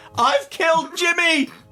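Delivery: very high, tearful sobbing wail. Recounting what a man wailed at the top of his voice, retelling a tearful wail. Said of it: "wailed at the top of his voice in tears".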